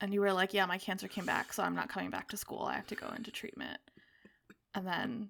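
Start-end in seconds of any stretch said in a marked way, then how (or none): 0.5-3.8 mock blunt, fed-up delivery. Retelling how the other speaker announced the cancer news: imitating a fed-up blunt tone. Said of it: "you sounded really fed up".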